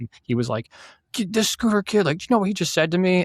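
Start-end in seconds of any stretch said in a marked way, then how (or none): 1.1-3.2 angry, freaking-out, complaining tone, higher pitch. Retelling a coworker complaining to the boss: imitating someone freaking out. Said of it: "Dude, you're freaking out".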